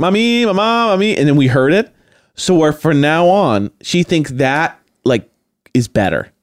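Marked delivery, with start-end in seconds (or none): 0.0-1.2 odd, lilting sing-song calling cadence. Retelling how a young daughter calls her parents: imitating a child's weird calling cadence. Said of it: "she changed her cadence to this weird".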